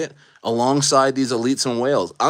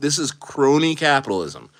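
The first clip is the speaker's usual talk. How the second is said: usual speaking voice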